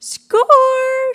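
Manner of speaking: bright, very high, loud trilled exclamation. Reading aloud, a character finds bottles in a minibar: trilling exclamation. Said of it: "she trills".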